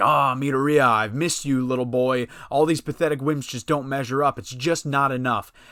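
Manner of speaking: ordinary delivery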